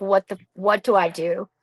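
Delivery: put-on tearful crying. Retelling calling a mentor for help: retelling own crying plea. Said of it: "I'm crying".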